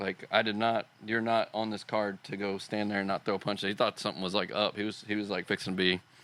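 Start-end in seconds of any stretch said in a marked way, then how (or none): none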